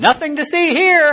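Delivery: put-on very high, shouty blurted yell. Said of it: "Then why are you yelling it at everybody?".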